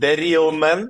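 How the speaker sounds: heavy Russian accent on real man. Speaker giving a long talk repeats a phrase, strong russian accent. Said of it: "I will say it uh, with the strong Russian accent".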